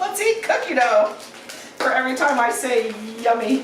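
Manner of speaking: high-pitched, laughing through the words.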